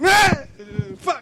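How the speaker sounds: high, loud, startled outburst. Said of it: "you're like".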